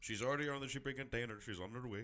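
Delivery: clumsy, bad put-on Indian accent. Retelling a phone call with people in india, in a bad indian accent. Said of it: "That's a bad Indian accent".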